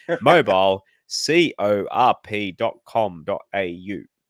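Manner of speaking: loud, very slow, mechanical robot voice. Host redoes a sponsor's web address after fumbling it, in a robot voice. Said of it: "I got to say it like a robot".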